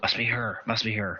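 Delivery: whispered aside in a character voice. Playing a character at prayer, whispering to an ally: whispering in character. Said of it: "he kind of whispers over to Malcolm and says".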